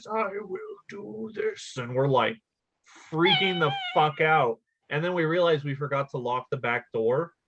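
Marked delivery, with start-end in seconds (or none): 0.1-1.7 slow, high, drawn-out, eerie creepy ghost voice. Retelling what a ghost on a show replied: imitating a creepy ghost voice. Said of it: "the ghost replied in a creepy voice".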